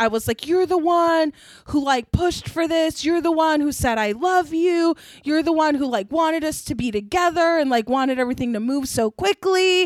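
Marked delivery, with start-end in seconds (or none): 0.5-7.6 tearful, sobbing, crying rant. Retelling a breakup argument, imitating own past screaming and sobbing. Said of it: "I started screaming and, like, sobbing".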